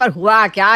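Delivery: ordinary delivery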